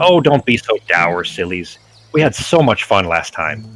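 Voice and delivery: gleeful, delighted fey creature voice. Voicing a fey creature greeting trapped travellers: gleeful fey voice. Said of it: "very gleeful almost".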